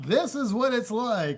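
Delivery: loud teacher voice. Answering whether this is the teacher voice: loud teacher voice. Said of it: "Is this what your teacher voice is like?".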